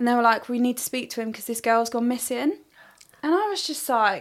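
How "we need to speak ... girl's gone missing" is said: usual speaking voice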